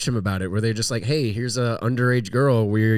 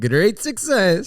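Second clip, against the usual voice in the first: put-on Eastern European accent, higher; 8 semitones higher than usual. Urged by the others to try it, the speaker attempts a Borat impression. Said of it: "pretty good".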